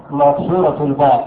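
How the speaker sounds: ordinary delivery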